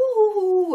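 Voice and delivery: high cartoon-ghost "ouh".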